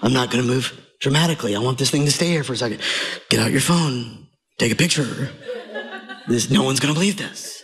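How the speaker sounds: soft, hushed tones. Acting out staying still so a dove won't fly away, in hushed tones. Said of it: "I'm going to speak in hushed tones".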